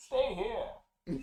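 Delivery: exaggerated loud high voice. Going after a sewer monster with a partner, speaker does an exaggerated Bane voice. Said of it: "You're exaggerating it".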